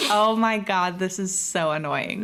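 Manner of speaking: usual speaking voice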